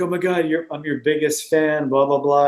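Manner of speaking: ordinary talk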